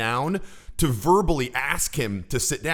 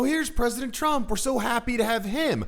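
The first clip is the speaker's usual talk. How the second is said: overly eager, supplicating, slightly too high pitch; 9 semitones higher than usual. Showing how he sounded before advising a lower tonality, imitating a bit too high, supplicative. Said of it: "a little bit too high".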